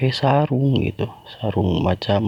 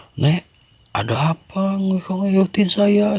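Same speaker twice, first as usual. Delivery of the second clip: mock bold yell, high, drawn-out and rising; 11 semitones higher than usual. Retelling confronting an old woman who followed her all the way home, shouting. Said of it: "saya teriak-teriak ke dia".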